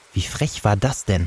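plain reading voice

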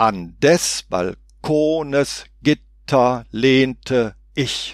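heavy, exaggerated stress on every other syllable. Reading lines aloud to show their form, every second syllable over-stressed. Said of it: "Ich kann es mal versuchen, überakzentuiert zu lesen".

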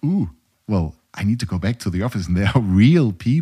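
plain

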